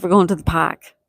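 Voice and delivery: put-on Australian accent. Speaker does the only Aussie accent they can, quoting Peter, Peter's Aussie accent. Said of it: "The only Aussie accent I can do is Peter".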